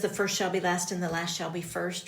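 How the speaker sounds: ordinary delivery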